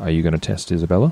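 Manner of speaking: sidelong, private aside. In a game scene, a character approaches another character and asks under his breath. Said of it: "under his breath".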